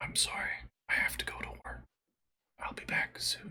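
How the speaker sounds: very quiet, soft, breathy whisper. A storyteller voices a character returning to the bedside, whispering. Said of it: "he whispers".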